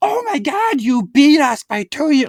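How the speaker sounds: mock, loud, very high, blurted-out shout. Retelling his wife answering another couple, acting out her loud yell. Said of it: "Like yelled it".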